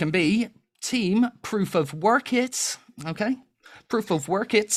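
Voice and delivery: put-on American accent. Host assigns contestants to a team in a put-on American accent. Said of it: "I enjoy it when you do the American accent".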